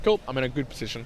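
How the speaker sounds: normal talking voice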